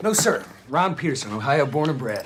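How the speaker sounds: put-on American accent. An irish man answering a question about who he is, fake american accent. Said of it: "Had you gone with the American accent".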